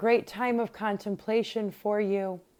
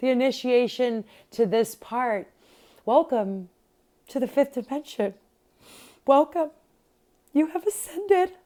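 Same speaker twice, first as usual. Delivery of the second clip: emotional, welling up, close to crying; 4 semitones higher, 4 dB louder than usual. Speaker welcoming listeners at the end of their initiation, getting very emotional. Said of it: "I'm getting very emotional".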